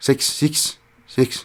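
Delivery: bad Kiwi accent on "six". Explaining how New Zealanders say a word: terrible New Zealand accent. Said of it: "Sorry, terrible, terrible New Zealand accent".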